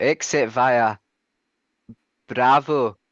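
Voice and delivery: attempted Northern Irish accent. Reading out a taxi instruction, the speaker tries an attempted northern irish accent. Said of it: "in a northern Irish accent".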